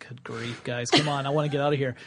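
plain

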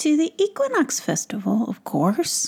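sheepish mumble. Caught while hoping to slip past his brothers, he answers: mumbled, embarrassed. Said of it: "mumbled Quill, feeling embarrassed".

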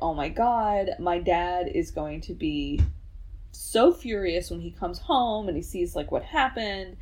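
plain

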